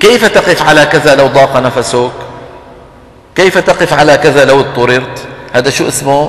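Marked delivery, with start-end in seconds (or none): none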